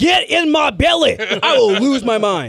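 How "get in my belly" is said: shout with raised, pitched-up voice. Imagining a wrestler coming back and shouting: shouting in Fat Bastard voice. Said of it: "she just shouts".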